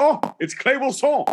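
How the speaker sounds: very high put-on Quebec French accent, announcer-like. A commentator shows the guest how he announces him at matches, put-on accent announcing. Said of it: "that's how I announce you".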